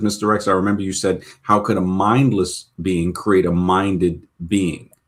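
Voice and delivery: ordinary talk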